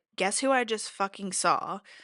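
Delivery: ordinary talk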